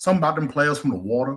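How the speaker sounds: high, speechifying, preachy pep-talk voice. Quoting a player's speech while talking football: Jameis Winston impression. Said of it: "that was a good impression".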